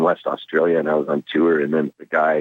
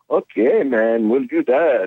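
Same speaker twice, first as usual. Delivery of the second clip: put-on Swedish accent, much higher; 8 semitones higher than usual. Retelling the replies of the man he asked for more studio time, imitating a swedish accent. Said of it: "he's got this Swedish accent".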